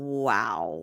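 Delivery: mock smug, drawn-out wow. Retelling how she answered him with a smirk: imitating a smirking wow. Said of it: "she just looks at him with a smirk like".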